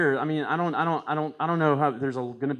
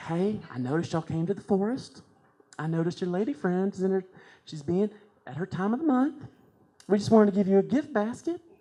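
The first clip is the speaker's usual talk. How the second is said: put-on Southern lady voice; 5 semitones higher than usual. A bear greets visitors to its forest with a gift basket, Southern Baptist woman voice. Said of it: "the voice of the bear is more of like a Southern Baptist woman".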